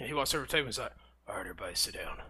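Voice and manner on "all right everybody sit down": put-on grizzled, very low, gravelly old-man rasp. Retelling a story, a man telling everybody to sit down in a gravelly voice. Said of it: "I think this is what his voice was. He was just kind of grizzled old man".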